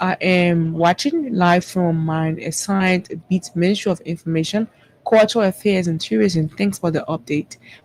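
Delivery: ordinary delivery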